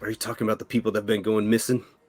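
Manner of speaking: soft half-whisper under the breath. A game master voices a man who looks at the player: half-whispering. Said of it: "And he whispers".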